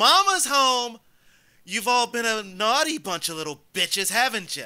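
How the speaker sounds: all-out, high, shrill in-character scream. Bursting through the broken gate: in-character scream. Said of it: "and scream".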